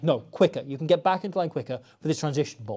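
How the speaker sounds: normal talking voice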